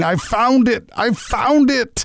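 put-on overjoyed whooping shout, high and drawn out. Telling a story of a woman who finds her coin, imitating excited yelling. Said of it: "bounds out of her little house yelling".

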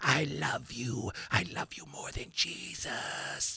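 whispered, breathy, creepy devil voice. Showing how the actor playing Lucifer talks, do Viggo Mortensen's creepy Lucifer voice. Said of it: "the way he talks like this".

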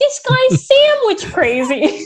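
high, slow, silly put-on voice. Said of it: "we always go".

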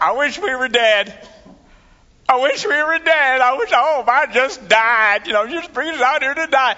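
put-on griping whine. Retelling the people's complaints in the desert: imitating whining. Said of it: "whining and bellyaching like there was no tomorrow".

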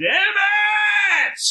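very high, shrill, drawn-out screaming yell. Voicing a character turning back and firing: yelling at the top of lungs. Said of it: "I turn around yelling my head off".

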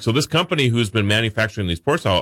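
plain

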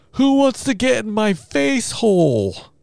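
put-on very high, slow, drawn-out little-kid holler. Retelling being woken by a three-year-old: imitating a child yelling. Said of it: "you hear your three-year-old yell from the other room".

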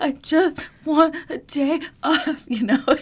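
put-on loud, high sobbing wail, very slow, drawn-out. Retelling being told to take the day off, acting out past self bawling. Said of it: "I'm like bawling".

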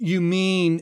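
voice full of total disgust and scorn. Retelling what she said to the speaker, imitating a disgusted voice. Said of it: "she says this with a total disgust in her voice".

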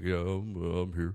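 put-on bored, flat, monotone voice. Mocking the movie's performance of Ben Grimm, imitating Ben Grimm's bored monotone. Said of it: "He is like just monotone throughout the whole thing".

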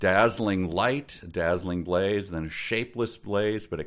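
plain reading voice

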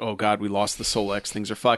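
mock grave, deadly serious tone. Retelling characters standing in a room, imitating characters being deadly serious. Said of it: "they're all just standing and they're all deadly serious".

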